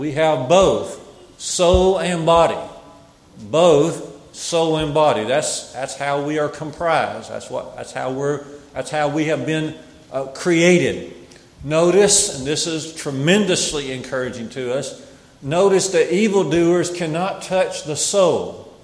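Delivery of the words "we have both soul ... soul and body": "both" pressed slow and louder. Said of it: "underline the word both there".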